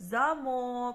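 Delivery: замок with stress on the last syllable.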